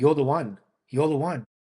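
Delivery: non-native, broken English, plain phrasing. Retelling what a woman said to him: imitating broken English. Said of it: "in her broken English".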